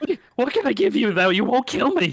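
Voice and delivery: terrified screaming, pitched way up high. Voicing a fleeing creature begging not to be killed: screaming in terror. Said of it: "he's screaming".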